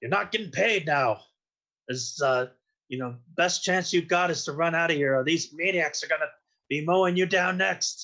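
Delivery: scathing tone, called out across a distance. Player's character leans out of cover toward minor thugs, yelling. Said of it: "I'm leaning out and I'm yelling at them".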